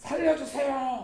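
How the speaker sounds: high, slow, drawn-out crying out.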